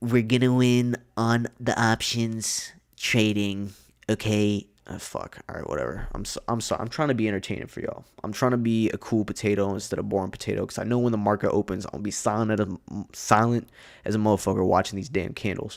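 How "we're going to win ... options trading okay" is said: put-on voice, each word drawn out slowly. Talking about diving into options trading, in a Donald Trump voice. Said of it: "It's fucking Trump voice".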